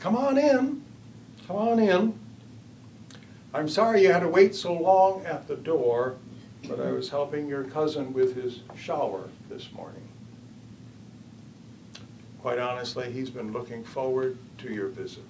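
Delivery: put-on older woman's Texas accent. Retelling a visit, the speaker quotes an older woman at the door in a Texas accent. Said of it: "she said in her Texas accent".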